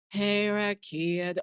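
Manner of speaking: gloomy, downcast, dispirited, depressed tone. Imitating the guest's greeting back at them: imitating a depressed greeting. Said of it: "you sound like it depressed you".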